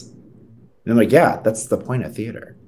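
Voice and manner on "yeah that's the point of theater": normal talking voice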